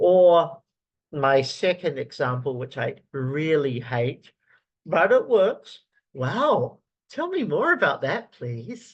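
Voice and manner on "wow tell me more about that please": exaggerated, feigned fascination, swooping sing-song. Demonstrating a technique he hates, the speaker sounds fake interested. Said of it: "I probably look incredibly fake when I do that".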